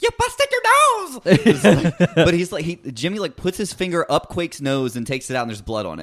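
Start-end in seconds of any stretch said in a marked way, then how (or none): 0.0-2.1 put-on shrill swooping scream, very high, slow, drawn-out. You are describing the scene outside after Quake gets hurt, imitating Jimmy screaming at him. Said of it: "Jimmy is screaming at him".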